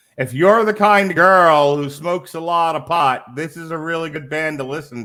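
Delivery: hollered out in a high, loud yell. Recommending a band to a certain kind of listener: yelling. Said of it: "why are you yelling that".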